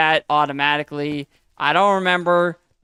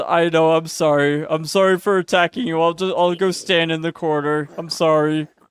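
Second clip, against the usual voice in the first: put-on apologetic crowd voice. Voicing a game mob that went into timeout: voicing the mob apologizing. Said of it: "He says".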